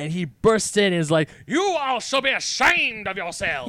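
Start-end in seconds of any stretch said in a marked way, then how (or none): 1.5-3.7 great big Southern drawl, pitched up. Retelling the moment Benoit Blanc bursts in, Benoit Blanc southern drawl. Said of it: "Into his great southern drawl".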